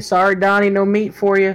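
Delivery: loud shouting voice. Calling out in character to a companion across the field: yelling. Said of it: "I'm gonna yell to Donnie".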